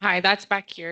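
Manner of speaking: very loud voice. Calling out from the back before asking a question: very loud voice. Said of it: "my voice was very loud there".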